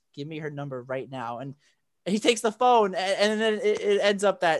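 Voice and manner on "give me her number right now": play-acted dead-earnest, super serious, firm tone. Retelling a scene where Zapp demands a phone number: super serious. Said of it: "He gets, like, super serious".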